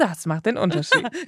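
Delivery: put-on TV commercial announcer voice. Showing how a line should be said, in a put-on advertising voice. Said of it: "Das musst du auch mit so einer Werbestimme sagen".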